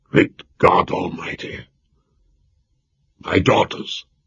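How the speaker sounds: hoarse, rasping, breathy whisper of shock. Reading a novel aloud, a lord hears his daughters were taken: hoarse voice. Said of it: "in a hoarse voice he said".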